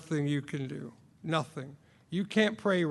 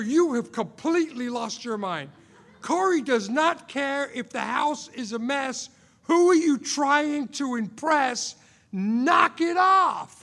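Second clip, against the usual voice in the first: acted, exasperated outburst of lost temper; 9 semitones higher, 5 dB louder than usual. Retelling what you said to her while she cleaned, reenacting losing your temper. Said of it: "I lose my mind".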